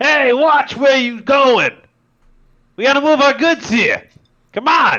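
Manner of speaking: shrill, very loud, high-pitched shout. Voicing a short man moving heavy goods past the party: yelling out. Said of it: "yelling out".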